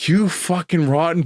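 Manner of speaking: enraged, high, furious outburst. Retelling a snap at a brother who wanted to leave: imitating an angry retort. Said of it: "I was so fucking mad".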